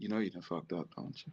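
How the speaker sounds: soft, kindly, calm, gentle, very quiet whisper. Showing how he told a hard truth without yelling: calm and gentle. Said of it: "did I say it loud? Did I scream and holler? ... Just nice".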